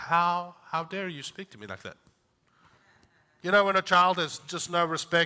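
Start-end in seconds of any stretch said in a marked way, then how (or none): none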